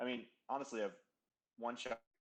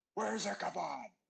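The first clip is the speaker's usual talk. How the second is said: raspy, high-pitched, loud yell; 9 semitones higher, 6 dB louder than usual. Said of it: "my raspiest Batman voice".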